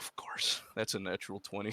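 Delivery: disappointed, soft, breathy, near-whispered sigh. Announcing that the player's roll is a natural twenty, sounding disappointed. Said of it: "You sounded disappointed".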